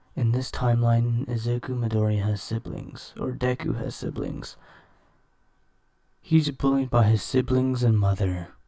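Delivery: speaking in a whisper. Explaining a story plot while others in the household sleep: whispering. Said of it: "whispering is because everyone in my household right now is sleeping".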